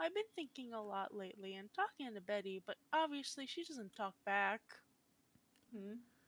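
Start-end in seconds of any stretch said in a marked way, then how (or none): none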